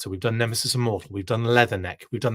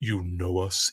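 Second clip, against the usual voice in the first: deep, low, sexy voice; 4 semitones lower, 4 dB quieter than usual. Speaker recounting a scene from the G.I. Joe movie: deep, sexy Xandar voice. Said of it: "in the deepest, sexiest voice ever".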